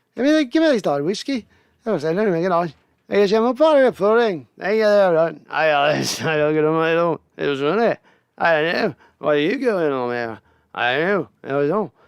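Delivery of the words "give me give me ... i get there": high, strong, put-on Irish accent. Describing how drinking brings out their Irish, in an Irish accent. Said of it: "I start talking Irish".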